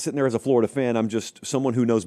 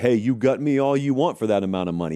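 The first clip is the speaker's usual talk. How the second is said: scornful, taunting, sneering, mocking voice. Retelling what critics of fired coaches say: imitating mocking people. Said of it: "people who mockingly say".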